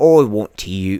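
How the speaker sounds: put-on British-accented voice. Retelling a British kid from Call of Duty years ago, imitating a British accent. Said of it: "why am I doing a British voice?".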